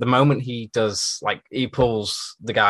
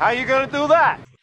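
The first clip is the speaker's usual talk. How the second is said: put-on New York accent, higher and louder; 4 dB louder than usual. Repeating the detective's line along with the others: imitating new york accent. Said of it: "Was it the New York accent?".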